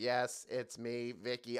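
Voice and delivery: flat, level, slow monotone robot voice. Talking about a syndicated show's robot character, doing Vicky's robot voice. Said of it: "Vicky had a robot voice. She would always go".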